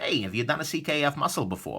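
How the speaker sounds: usual speaking voice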